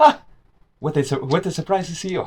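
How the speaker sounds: put-on middle-aged woman voice. A game master voices a very tall woman looking down at the players, middle-aged woman voice. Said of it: "as this middle-aged woman just looks at you".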